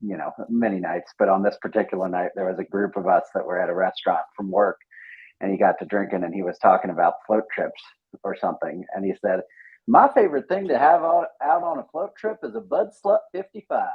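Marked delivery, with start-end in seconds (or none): 9.9-13.9 put-on very high-pitched, thick, heavy Southern accent. Retelling a coworker's words at a restaurant: imitating a thick Southern accent. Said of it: "has a very thick Southern accent".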